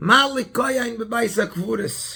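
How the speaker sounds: put-on Polish accent. Retelling a story, a man turns to a passerby and speaks in a Polish accent. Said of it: "He says it to him in like a, a Polish accent".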